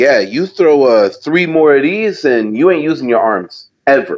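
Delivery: ordinary talk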